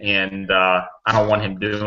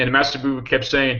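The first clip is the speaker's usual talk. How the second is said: usual speaking voice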